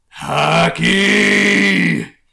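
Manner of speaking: huge, very loud, rough, booming bellow. A voice booms throughout the entire bar, booming voice. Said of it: "a booming voice go throughout the entire bar".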